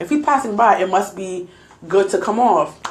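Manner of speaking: ordinary talk, nothing marked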